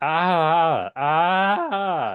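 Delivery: scream chopped into sections, high and loud. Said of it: "instead of just, like, a long scream".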